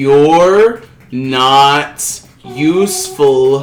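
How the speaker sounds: very slow, deliberate, each word spelled out. Answering a complaint about talking too fast, very slow speech. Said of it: "I'll speak it slowly for you".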